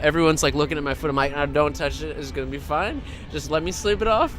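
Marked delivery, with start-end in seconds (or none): none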